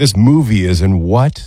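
slow, pointed, hinting tone.

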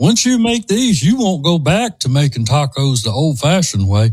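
large Texan man's voice. Quoting a big Texas cook about his recipe: Hank Hill voice. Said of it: "kinda like Hank Hill".

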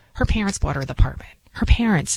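hushed, gossipy, secretive whisper.

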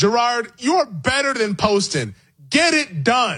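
high, slow, rallying, cheering voice.

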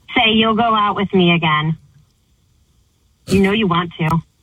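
aggressive. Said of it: "do you have to be so aggressive?".

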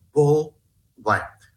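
quiet whispering. Quoting what a man suddenly had to tell the speaker, retelling a whisper. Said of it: "He whispers and he says".

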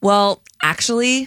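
exaggerated, patronizing, condescending know-it-all tone. Reading out an everyday phrase to the others: mock condescending tone. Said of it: "as condescending as I can".

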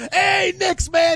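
high, loud shouted delivery.

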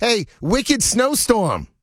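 put-on New England accent. Telling would-be movers what they should start saying; new england accent. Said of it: "That's my New England accent".

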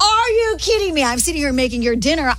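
high, rising exasperated rant.

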